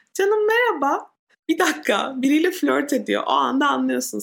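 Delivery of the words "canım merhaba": thin, flirty, slightly high voice. Speaker imitates someone flirting: thin, slightly high voice. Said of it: "İnce ve biraz yüksek".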